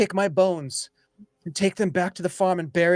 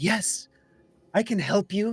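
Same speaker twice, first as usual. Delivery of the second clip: put-on small kid's voice. Torben turns back to his companions, his voice changed to a kid's voice. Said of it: "it sounds like this kid".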